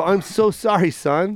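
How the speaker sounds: mock crying, slow, broken-down sobbing delivery. Imagining his son saying he's never around, and his reply: mock crying apology. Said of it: "I will break down and cry and go".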